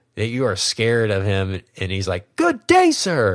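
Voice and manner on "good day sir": put-on furious scream, higher. Retelling a movie scene where he is screaming at you: screaming like Willy Wonka. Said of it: "And he's screaming at you".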